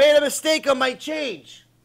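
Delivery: loud, slow, high-pitched yell, words drawn out. Acting out a customer at a store scolding an employee: imitating a customer yelling. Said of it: "You don't have to yell at the guy".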